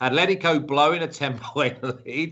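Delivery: talking while breaking into a laugh mid-line.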